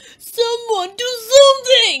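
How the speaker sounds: very loud, high, shrill alarmed shouting. Sea Cucumber calls for help as a diver runs out of air: shouting. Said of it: "shouted Sea Cucumber".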